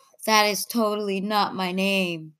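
ordinary talk

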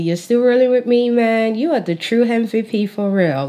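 put-on American accent. Greeting viewers at the start of an episode, in a put-on american accent. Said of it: "Look at me putting on my American accent".

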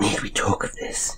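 muttered under breath. A girl asks a man a question, under her breath. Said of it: "under her breath".

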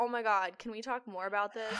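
ordinary talk, nothing marked

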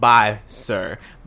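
ordinary talk, nothing marked

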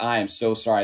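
ordinary talk, nothing marked

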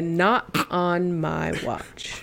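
slow, drawn-out, promo-style delivery. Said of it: "Charlotte said".

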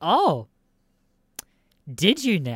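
put-on loud, very slow, drawn-out doubting sing-song. Retelling what the woman at the police van said, mock-suspicious tone. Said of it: "In that exact fucking tone".

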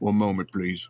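very quiet murmur under the breath. Voicing a character who drinks a potion while staring down a foe: very quiet. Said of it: "just very quietly saying".

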